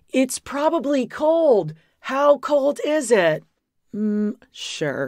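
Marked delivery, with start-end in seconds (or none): 0.1-3.4 high, stretched-out, drawn-out mock screaming. Retelling someone running into the water: imitating Cody screaming. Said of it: "He's screaming".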